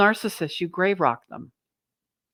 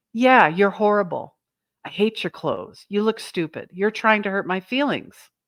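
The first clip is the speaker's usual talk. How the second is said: ordinary delivery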